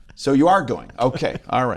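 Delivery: ordinary delivery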